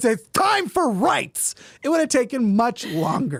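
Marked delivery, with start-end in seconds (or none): 0.0-1.5 put-on flamboyant voice. Imitating a friend in a lime green banana hammock demanding rights: imitating a friend. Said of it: "that impression".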